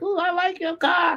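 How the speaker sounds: very high-pitched, sweet lady voice.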